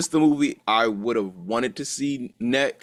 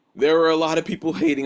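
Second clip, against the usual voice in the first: voice cracking and breaking mid-line; 4 semitones higher than usual. Talking about a movie people hated, voice cracks. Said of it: "Voice crack".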